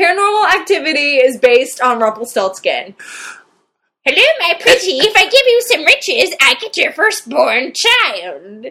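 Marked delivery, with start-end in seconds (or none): 4.0-8.7 storybook imp character voice. Mocking a movie's plot to a co-host, doing a Rumpelstiltskin impression. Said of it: "That was an Aces Rumpelstiltskin impression there".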